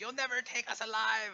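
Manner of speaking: slightly shrill, very high call-out. Game master voices an immobilized shock lancer calling out: slightly shrill voice. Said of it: "calls out in a slightly shrill voice".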